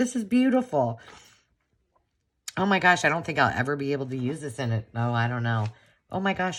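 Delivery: overwhelmed, teary gushing, close to crying. Reacting to something given to them, emotional, near tears. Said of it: "Why am I getting so emotional?".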